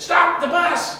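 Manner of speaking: excited, high, slow, loud shout.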